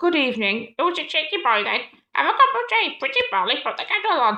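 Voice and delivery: put-on pet parrot voice. Doing animal voices in a story, the speaker talks as a parrot in a parrot voice. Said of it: "That's my parrot voice".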